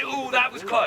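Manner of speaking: ordinary talk, nothing marked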